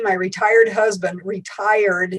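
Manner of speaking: retired drawn out and stressed.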